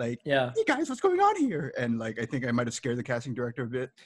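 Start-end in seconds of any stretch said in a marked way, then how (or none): 0.2-1.7 mock very high, bubbly, peppy voice. Retelling his audition for a casting director, mimicking his peppy audition. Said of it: "I tried to do it really like peppy".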